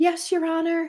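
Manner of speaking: high, put-on, babyish, childlike voice. Describing a woman in court answering the judge: baby voice. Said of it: "There's the baby voice".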